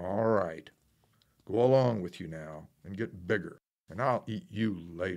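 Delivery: loud, growling fairy-tale troll voice. The troll answers the goat who urged him to wait, growling. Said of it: "growled the troll".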